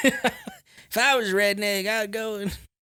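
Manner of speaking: very drawn-out, slow, high, swooping sing-song. Quoting a Jeff Foxworthy redneck joke, talking like Mater. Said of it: "I know I'm talking like Mater right now".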